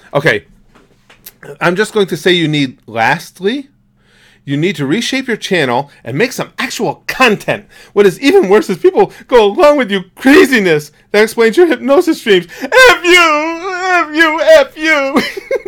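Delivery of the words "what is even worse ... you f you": mock pitched-up, slow, drawn-out, pathetic whiny sob. Mocking someone's message by saying it in a whiny, pathetic voice. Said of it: "in just the whiniest, most pathetic, sad voice".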